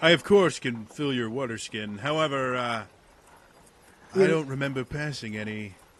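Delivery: tired, weary attempt at a heroic voice. Voicing a character asked to fill a water skin: tired attempt at heroic voice. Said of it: "me super, super tired and exhausted trying to use my, my heroic expression".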